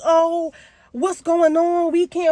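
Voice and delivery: mock high, drawn-out upset yelling. Retelling a cousin yelling on the phone during a thunderstorm: imitating cousin screaming. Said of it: "My cousin over here screaming".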